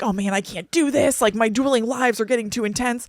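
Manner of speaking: put-on freaking-out voice. Retelling a film scene where Selina starts freaking out: imitating Selina freaking out. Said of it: "she starts freaking out".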